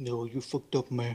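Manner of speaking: very quiet put-on voice.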